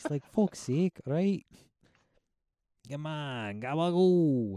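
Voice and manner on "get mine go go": put-on New York accent. Discussing a Batman movie's casting, mimicking Penguin, in Penguin's New York accent. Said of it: "why is Penguin talking like a New York accent".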